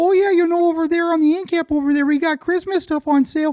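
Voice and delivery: put-on high, odd Wisconsin accent. Speaker imitating a Rite Aid worker answering a customer: imitating a clerk's strange accent. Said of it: "It almost sounds like Carl from".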